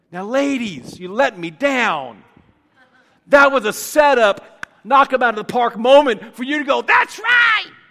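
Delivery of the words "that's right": very high put-on woman's voice. The speaker addresses the ladies who missed their cue; All in the Family female voice. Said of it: "That was my best female voice this morning".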